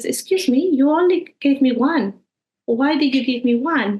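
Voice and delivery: mild, courteous, polite, low-key objecting tone. Retelling what the children said when given one pound: imitating a very quiet protest. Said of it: "in a very quiet way".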